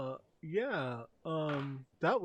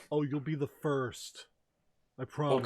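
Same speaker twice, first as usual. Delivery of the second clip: mocking, insincere, sarcastic tone. Answering a request from the other character, sarcastic. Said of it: "I feel like you're being sarcastic".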